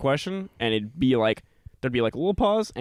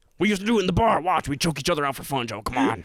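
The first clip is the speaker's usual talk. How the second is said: goading, egging-on put-on voice; 3 semitones higher than usual. Retelling a guest begging the host to choke him out, imitating Alex Jones. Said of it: "He was like".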